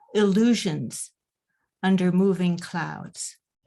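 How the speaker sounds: slow, unhurried reading. At a reading, finishing her own short poem for the audience, reading slowly. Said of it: "I will try to read it slowly".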